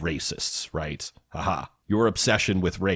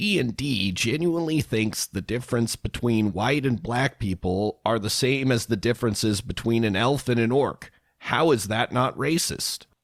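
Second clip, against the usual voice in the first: high, put-on nerdy voice; 5 semitones higher than usual. Reading a right-wing Twitter post aloud in a put-on nerdy voice. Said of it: "I'm going to do my nerd voice".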